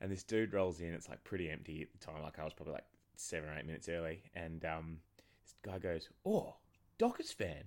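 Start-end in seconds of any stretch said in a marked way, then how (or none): 6.2-7.6 put-on thick English accent, higher pitch. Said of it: "he's had a very thick English accent".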